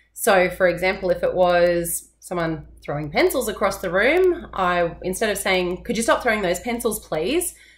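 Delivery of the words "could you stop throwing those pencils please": pleading pitch rise on the word please. Showing the polite way of asking someone to stop: pleading rise on please. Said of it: "the please, my voice went up. It sounded very pleading".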